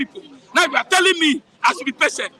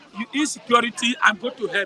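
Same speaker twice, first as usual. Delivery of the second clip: ordinary talk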